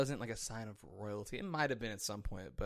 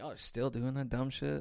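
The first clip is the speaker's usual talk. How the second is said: thoroughly disappointed, let-down elder statesman scolding voice; 3 semitones higher than usual. Imagining how George Washington would react today: imitating George Washington. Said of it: "George Washington's like".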